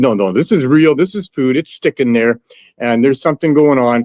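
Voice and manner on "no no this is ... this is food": plain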